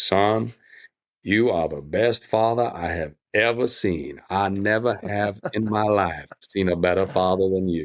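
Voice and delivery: put-on proud, fatherly voice with Southern Alabama accent. Remembering a loving man from Alabama, doing his booming Southern voice. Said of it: "he had this booming Southern voice".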